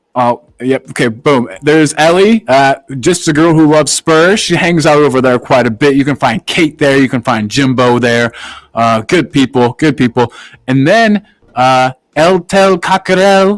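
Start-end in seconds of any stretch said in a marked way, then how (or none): 12.1-13.5 poor, clumsy, put-on Spanish accent. Reading out a channel name for viewers: bad Spanish accent. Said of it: "my Spanish accent is not very good".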